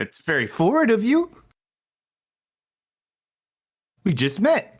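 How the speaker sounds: high, sing-song, swooping character voice. Voicing a talking door answering a player: talking doorknob voice. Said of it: "if you sound like that".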